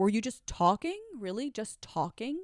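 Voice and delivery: put-on sarcastic, incredulous tone with swooping pitch. Retelling a confrontation with him, the speaker reenacts their sarcastic reply.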